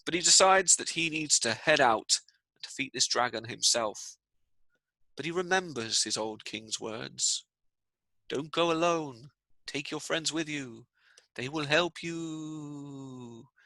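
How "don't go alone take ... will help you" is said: spooky, hushed, ghostly otherworldly voice, word you drawn out. Telling a story, voice the old king's remembered words in a ghost voice. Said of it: "I don't know why I'm saying it in a ghost voice".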